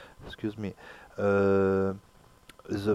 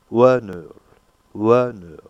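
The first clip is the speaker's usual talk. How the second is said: the syllable WA stressed loud and strong. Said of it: "The stress is on the first syllable".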